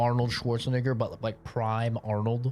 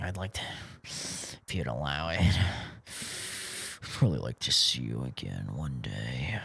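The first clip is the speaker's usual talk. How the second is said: slow, creepy, lingering voice; 11 semitones lower, 6 dB quieter than usual. Imitating a line asking to see someone again: mock creepy incel voice. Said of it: "why are you saying it like a fucking incel after a first date".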